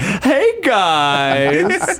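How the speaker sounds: high, swooping drag queen voice, "guys" drawn out. Asked about her drag voice, a guest demonstrates it after her boy voice: drag queen voice. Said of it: "And then in drag, it's like".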